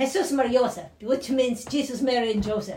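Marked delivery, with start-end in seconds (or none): 0.0-0.9 rattled-off fast exclamation, words run together. Retelling the mother's only exclamation instead of swearing: imitating her saying it very fast. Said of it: "She says it so fast".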